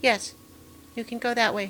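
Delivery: tiny, soft little dragon voice. Voicing a dragon speaking into a player's head, in a tiny little dragon voice. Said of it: "just a tiny, tiny little voice".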